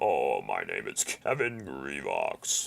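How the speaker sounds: very deep, very slow, swooping, creaky drawl. Answering a viewer's request to do a commentary as Kevin Grivox: Kevin Grivox impression. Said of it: "doing your Kevin Grivox impression".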